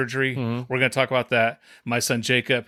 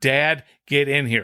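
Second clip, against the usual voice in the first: put-on child voice, yelling, stretched out. Retelling a shout calling Dad to come in: imitating Jacob screaming. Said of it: "scream at the top of his lungs".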